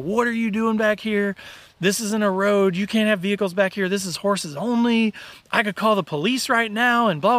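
mock scolding tirade, angry, yelled. Retelling how a group leader came up to the window: imitating someone yelling. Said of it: "he starts yelling at me".

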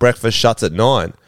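ordinary talk

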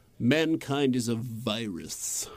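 low, very slow, virus drawn out. Discussing a book passage, the speaker reads it in a Hugo Weaving voice. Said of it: "read that part of the book in Hugo Weaving's voice".

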